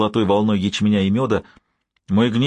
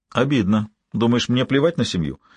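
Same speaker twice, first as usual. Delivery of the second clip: ordinary delivery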